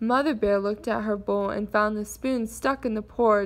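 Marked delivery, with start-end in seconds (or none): none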